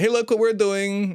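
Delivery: put-on very high, botched Russian accent. Mocking how Russians act, the speaker does a bad Russian accent. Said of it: "That was a bad Russian accent".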